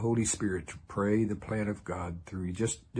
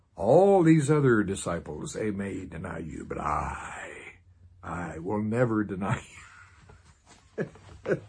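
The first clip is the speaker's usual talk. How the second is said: put-on puffed-up prideful voice, very slow; 5 dB louder than usual. Retelling a disciple's vow never to deny, in a mock-prideful voice. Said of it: "trying to use a prideful voice here".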